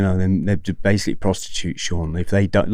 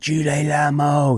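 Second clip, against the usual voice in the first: put-on furious screaming, higher; 8 semitones higher than usual. Retelling a fight where a chasing triad screams: imitating someone screaming furiously. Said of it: "he's screaming".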